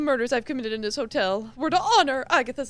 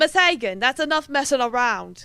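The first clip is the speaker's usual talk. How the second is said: put-on masculine British man's accent; 3 dB louder than usual. Playing the professor addressing Miss Hagen, in a masculine British accent. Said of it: "It should just be a masculine British accent".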